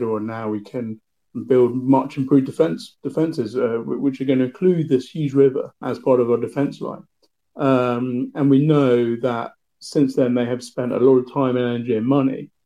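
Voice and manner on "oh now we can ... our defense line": ordinary delivery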